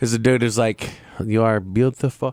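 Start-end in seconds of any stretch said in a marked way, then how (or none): 1.2-2.3 put-on Spanish accent. Imitating a TikTok creator who tells viewers they are beautiful: Crazy Man Spanish accent impression. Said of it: "some sort of Spanish accent".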